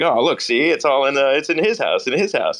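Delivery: put-on calming old Hollywood leading-man voice. Acting out the banker calming a bank run in the film: James Stewart impression. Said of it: "my James Stewart impression".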